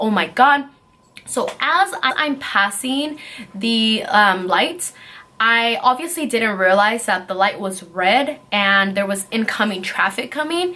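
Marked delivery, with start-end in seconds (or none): 0.0-0.7 play-acted panicked, shaken exclamation. Retelling driving off through the lights: imitating own panicked exclamation. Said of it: "I was just panicking, I was shaking".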